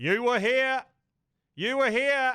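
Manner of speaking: high loud classic Australian yelling. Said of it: "there's a classic Australian goes".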